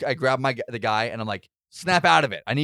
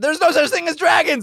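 very high, put-on shrieking yell; 7 dB louder than usual. Playing a character bursting into a room: screaming in character. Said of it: "I run in screaming that".

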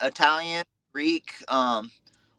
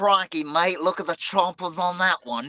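put-on Australian accent, pitched up; 5 semitones higher than usual. Asked by the host for your best Aussie accent, in an Aussie accent. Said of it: "Give me your best Aussie accent".

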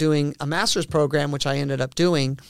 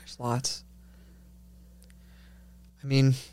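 close to tears, teary, choked-up, emotion catching; 2 semitones lower, 5 dB quieter than usual. A guest, asked for a moment of meaning, answers teary and choked up. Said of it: "I didn't mean to get teary-eyed".

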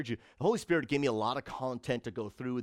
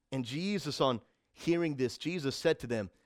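ordinary delivery

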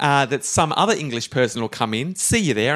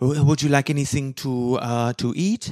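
put-on French accent. Speaker voices the barmaid character in the scene, French barmaid accent. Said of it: "my French barmaid accent".

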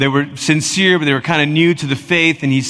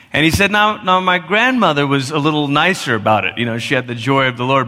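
plain

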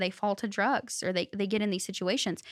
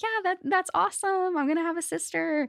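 very high, thrilled, excited cheer; 9 semitones higher than usual. Retelling siblings' reaction to news of an adoption, imitating excited siblings. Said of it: "they were so excited".

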